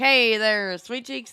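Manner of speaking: put-on slow drawling old mobster voice. Reminding the other speaker of the funny voice they do, demonstrating a mobster voice. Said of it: "When you do the mobster voice".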